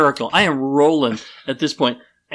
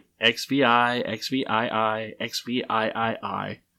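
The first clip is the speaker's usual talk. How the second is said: put-on patronizing tone, much slower and quieter; 4 semitones lower, 7 dB quieter than usual. Finishing the count for a woman who trailed off asleep: acting out slow patronizing count. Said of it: "I did it really slowly and kind of patronizingly".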